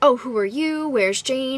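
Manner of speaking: slow, angry, hostile, confrontational tone. Retelling a sister-in-law who came downstairs not knowing them: retelling someone screaming. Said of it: "She is screaming at me".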